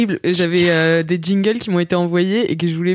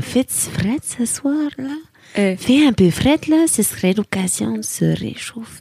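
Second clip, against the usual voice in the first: put-on seductive, sexy Québécois accent; 4 semitones higher than usual. Asked for a sexy voice with a Québécois accent: sexy Québécois accent. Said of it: "Fais-nous une voix sexy avec l'accent québécois".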